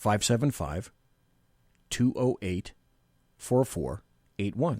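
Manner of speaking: slow, deliberate pace. A host giving listeners the call-in number a second time, slowly. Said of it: "I'll say it slower this time".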